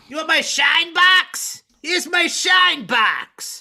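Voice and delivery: loud, high, belted-out tough-guy voice. After saying people love it when you do this, show off your Joe Pesci impression. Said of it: "They just love when I do my Joe Pesci".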